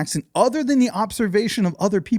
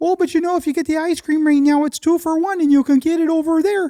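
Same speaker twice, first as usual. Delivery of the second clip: put-on higher pitch, leaning hard into a Wisconsin accent; 8 semitones higher than usual. Imitating a cashier whose accent puzzled you, in a Jimmy Neutron mixed with Wisconsin accent. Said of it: "Jimmy Neutron mixed with Wisconsin".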